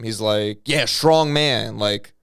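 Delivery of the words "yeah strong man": needling, goading, taunting, mocking tone. Retelling how a kid talked back to the man beating him: imitating someone taunting. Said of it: "taunting him".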